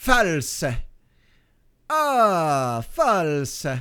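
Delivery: put-on Italian accent. While coding, repeating a word aloud: Italian accent. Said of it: "That's my Italian accent".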